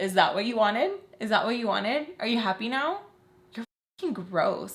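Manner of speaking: acted laughing. Retelling what she said after making the speaker cry, imitating her laughing. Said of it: "she starts laughing".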